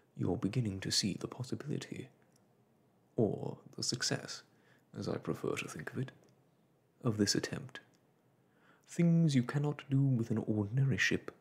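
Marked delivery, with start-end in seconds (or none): none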